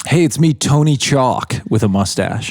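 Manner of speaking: slow, unhurried TV commercial spokesman voice. Imitating a celebrity selling windows in an ad: imitating Tony Hawk ads. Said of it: "Tony Hawk commercial".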